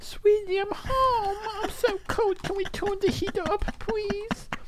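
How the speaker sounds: very high, soft, goofy cutesy voice. Showing the voice used with a girlfriend at home, a silly, stupid voice. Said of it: "do this silly, like, stupid voice".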